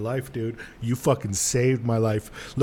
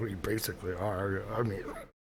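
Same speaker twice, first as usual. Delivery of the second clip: soft mumble under the breath. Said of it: "I mumble behind, under my breath".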